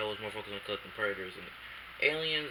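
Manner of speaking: soft, quiet, low-volume speech. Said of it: "Sorry if I'm speaking low".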